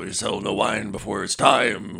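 put-on smoldering voice. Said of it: "looks at them and smoldering".

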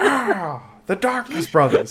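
very high, wild, over-the-top holler with big swoops. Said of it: "[name] in the Chappelle Show yelling".

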